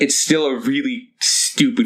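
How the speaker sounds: ordinary talk, nothing marked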